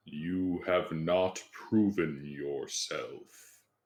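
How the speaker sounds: resounding, booming. Game master voicing the door as the players touch the arches: booming voice. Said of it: "a booming voice emanates from the door".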